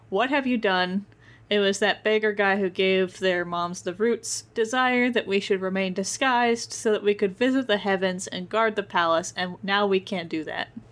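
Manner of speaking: ordinary talk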